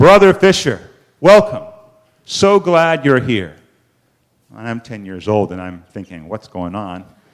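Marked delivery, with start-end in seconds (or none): 0.0-3.6 big, resounding, booming, very loud voice. Telling of entering church at ten and being greeted by a booming voice. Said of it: "a booming voice calling out to me".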